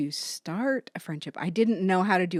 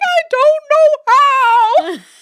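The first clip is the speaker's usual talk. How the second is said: mock sobbing, very high, loud, slow; 17 dB louder than usual. Recalling a sermon about needing good friends, the speaker acts out their past reply: retelling crying.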